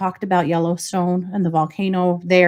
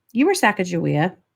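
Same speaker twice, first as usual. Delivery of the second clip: mock-deadpan, flat delivery. A mother retells what her daughter said on a walk, retelling a deadpan remark. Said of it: "Just deadpan".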